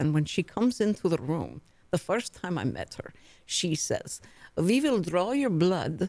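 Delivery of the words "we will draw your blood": put-on Croatian accent. Retelling the new doctor's first words: Doctor K's thick Croatian accent. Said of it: "she talks like this".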